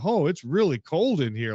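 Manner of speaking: put-on voice of a small child. Retelling what the thing in the hallway would say, real kid voice. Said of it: "like a real kid voice".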